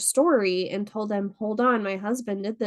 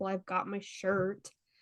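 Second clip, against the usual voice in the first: very soft, quiet, irked, annoyed mutter; 9 dB quieter than usual. Retelling a 911 caller's reply to the dispatcher; imitating an annoyed tone. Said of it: "He was kind of annoyed".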